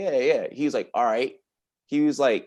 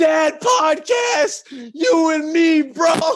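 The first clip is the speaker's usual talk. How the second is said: put-on very high drunken yell; 7 dB louder than usual. Telling of standing on a couch, acting out yelling at someone across the room. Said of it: "yelling at Will Greer".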